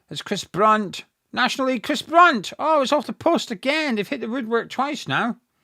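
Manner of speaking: high-pitched, loud, excited near-goal sports commentary.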